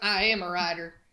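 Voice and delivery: imitated cowboy voice. Retelling how a character answers in a book: imitating a cowboy voice. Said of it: "Like a cowboy".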